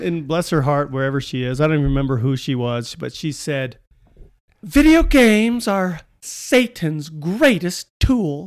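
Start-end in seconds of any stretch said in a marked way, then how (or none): 4.6-8.5 prim, high-pitched voice, drawn out very slowly. Retelling what a woman once said to you, in a perfect Church Lady voice. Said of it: "in you know perfect church lady voice".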